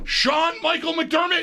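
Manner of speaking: very high calling yell. Picturing how a mom would call out the full name, imitating a mom yelling. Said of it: "I can hear a mom yelling".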